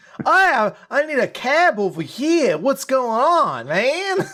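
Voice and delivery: weird, strange, very high-pitched New York accent. Imitate the movie character in New York, in a weird New York voice as Eddie Brock. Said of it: "a better like weird New York voice".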